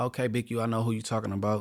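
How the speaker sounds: plain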